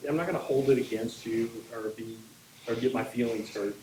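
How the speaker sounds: normal talking voice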